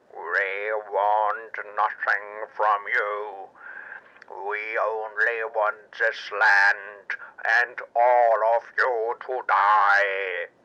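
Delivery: very low, slow, inhuman crab-creature monster voice. A giant crab disguised as a military guard answers the hero, giant crab monster voice. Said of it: "And in the place of a human being stood a giant crab, / And in the place of a human being stood a giant crab, towering twice double as high as our hero, red like blood and armed with giant pincers. /".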